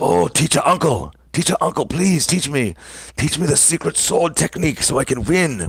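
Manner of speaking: voice like an anime character. Acting out how to call someone teacher uncle: anime-style voice. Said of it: "you have to say it like how they say on anime".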